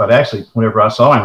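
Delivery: ordinary delivery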